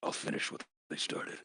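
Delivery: hushed, whispered big-villain voice. During a group game session, a player speaks up in a Thanos voice. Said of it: "in my best Thanos voice".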